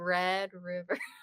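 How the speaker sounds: slowed-down put-on delivery. Imitating own careful way of saying the rivalry name: saying it slowly. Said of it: "You gotta slow it down".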